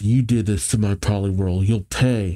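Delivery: ordinary delivery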